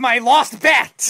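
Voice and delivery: loud, high-pitched, upset shouting. Cutting in to answer another speaker's question, shouting. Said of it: "Why are you shouting for?".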